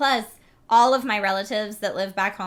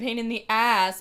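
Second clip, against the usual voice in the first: put-on snooty posh accent, different a in "ass"; 2 semitones higher than usual. Talking about accents, demonstrating how a snooty speaker would say it. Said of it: "Oh, I'm so snooty".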